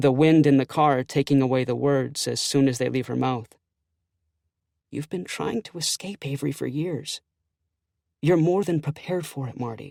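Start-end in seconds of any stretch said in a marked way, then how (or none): 4.9-9.9 voice lowered to a quieter whisper. In a car, a woman speaks to Marty, in a whisper. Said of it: "She lowers her voice to a whisper".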